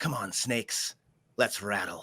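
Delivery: odd, strange, low, half-whispered voice. Game master voices the town mayor speaking to the players: Jesse Pettigrew's strange half-whisper. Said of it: "speaks in a strange, whispering voice".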